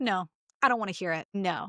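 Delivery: ordinary talk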